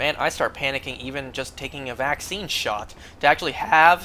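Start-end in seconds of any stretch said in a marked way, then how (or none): 3.2-4.1 loud voice, breaking mid-phrase. Telling listeners about dreading a blood draw; voice cracking. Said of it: "that voice crack".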